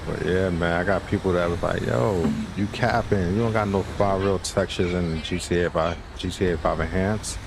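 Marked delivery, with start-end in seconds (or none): none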